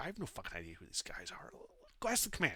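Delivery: hushed, whispered background murmur. Voicing someone murmuring behind a door: murmuring. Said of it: "you hear some murmuring".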